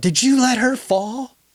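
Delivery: shrill, very high-pitched, accusing yell. Retelling what she yelled on finding the dog had fallen: imitating someone yelling. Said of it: "she just yelled".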